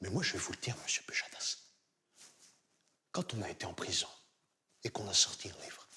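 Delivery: low, hushed put-on impression voice.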